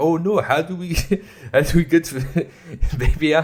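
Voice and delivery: put-on high, laughing, inaccurate Middle Eastern accent. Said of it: "wrong Middle Eastern accent".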